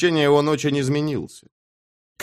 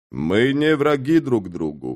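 ordinary delivery

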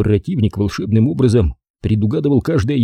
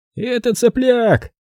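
very high, contemptuous, scornful laughing sneer; 13 semitones higher than usual. Reading a story aloud, a man dismisses someone: contemptuous laugh. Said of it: "презрительно засмеялся Лоуи".

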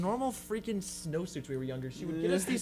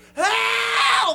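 acted scream, much higher, louder; 10 dB louder than usual. Recalling being stuck in snap pants at school, acting out past self: retelling a scream. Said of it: "I started screaming, like".

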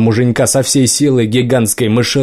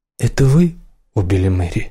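gentle, tender, kindly, caring voice; 3 semitones lower than usual. Narrator reading a woman's question to another woman about an alibi, asked gently. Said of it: "спросила Морган так ласково".

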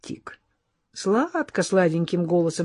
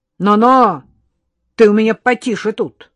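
loud, raised voice, rebuking tone; 3 semitones higher, 8 dB louder than usual. A man suddenly raises his voice at a girl, raised voice. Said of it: "[name] вдруг возвысил голос на девицу".

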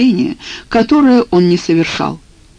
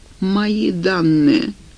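groaning. Watching someone open his files on her computer, he clutches his head, groaning. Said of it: "простонал он".

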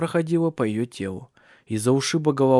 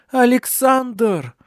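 very high, piercing, shrill, loud scream; 10 semitones higher, 5 dB louder than usual. A narrator reads a woman in sudden terrible pain, screaming. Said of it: "эхом отозвался ее крик в комнатах".

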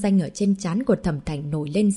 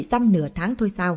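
usual speaking voice

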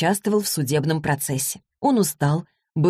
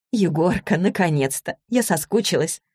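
plain

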